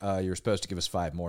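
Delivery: ordinary talk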